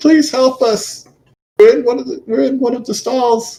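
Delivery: put-on woman's voice. Game master voicing a woman heard from further in, woman's voice calling for help. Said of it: "sounds like a woman's voice".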